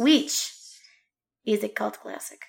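whispered, hushed, breathy fake Russian accent. Co-host introducing a Shining episode of Streaming and Screaming, in a fake Russian accent. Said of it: "Now I'm Russian".

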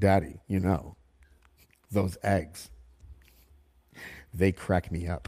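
put-on low, knowing, precocious kid voice, know-it-all. Imitating a nine-year-old son telling a dad joke: imitating a precocious child. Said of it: "he delivers it like he's so precocious".

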